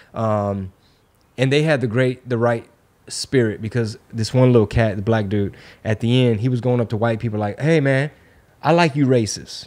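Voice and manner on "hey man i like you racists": faux-friendly, sarcastic tone. Retelling how a young man greeted people at the event: imitating someone being sarcastic. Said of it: "basically being sarcastic".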